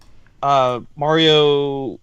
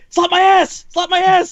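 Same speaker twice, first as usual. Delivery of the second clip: mock screaming, high and loud. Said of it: "like, screaming".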